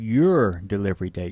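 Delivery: "your delivery date" said with stress. Demonstrating vocal emphasis with a teleconference example, stress on 'your delivery date'. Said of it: "Notice where the emphasis is on your delivery date".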